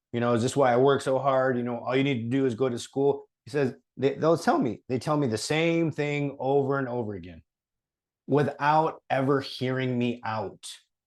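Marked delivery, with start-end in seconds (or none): none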